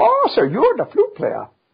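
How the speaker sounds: put-on slight Viennese accent with very high voice. Retelling how a little Viennese lady spoke to a flute player, with a slight put-on Viennese accent. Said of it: "without imitating Viennese accent too much".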